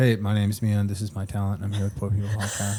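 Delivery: put-on deadpan delivery. Acting out Mia's imagined open mic talent intro: imitating Mia deadpan. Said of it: "Deadpan the entire time".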